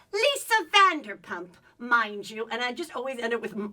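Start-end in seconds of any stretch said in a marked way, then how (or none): 0.1-2.4 put-on very loud, slow, swooping, lilting English accent. Doing an impression of a Real Housewives cast member: Dorit impression with English accent. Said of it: "she has an English accent".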